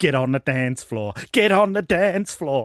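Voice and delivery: put-on slow, irritating, annoying American accent. Speaker quoting the listener's old character, in an annoying American accent. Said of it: "in the most annoying American accent".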